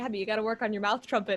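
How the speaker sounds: ordinary delivery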